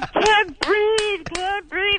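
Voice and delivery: very high-pitched, repeated yelling. Retelling how a man face-down in a pillow yelled, retelling a yell. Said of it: "And he's yelling".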